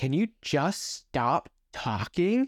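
put-on exasperated child's voice, slow, high, whiny and pleading.

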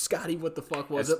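screaming, loud, demanding tone. Describing a scene where one man demands an answer of another, mock screaming. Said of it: "He just screams".

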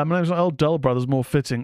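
ordinary talk

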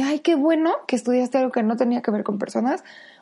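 acted ironic, tongue-in-cheek, sarcastic teasing tone. Retelling what the family always says to the speaker: imitating a sarcastic tone. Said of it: "obviamente en tono sarcástico".

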